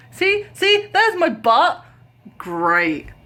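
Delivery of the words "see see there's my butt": full-on, high, raised yelling shout. Telling a story while a cat walks up the speaker's leg, shouting. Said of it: "I'm shouting".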